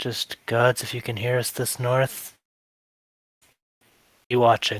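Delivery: barely voiced whispered mutter under the breath. Player voicing his character during a roll, muttering under his breath. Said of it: "Ragnar's just like under his breath".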